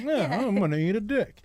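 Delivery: mannerly, well-bred, polite gentleman delivery. Describing a man who tucks a napkin into his shirt, polite gentleman voice. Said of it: "like a polite gentleman eating a dick".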